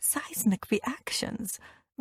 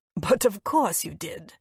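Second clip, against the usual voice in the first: scornful, sneering. Reading a scene where one character mocks another's studies: scornful. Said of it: "His lips curl into a scornful smile".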